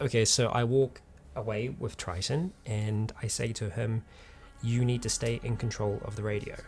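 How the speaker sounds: hushed, half-whispered aside. After asking the other three players to block their ears, speaker explains a plan: half-whispering. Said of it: "I'm whispering something that you can't know".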